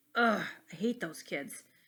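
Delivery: plain reading voice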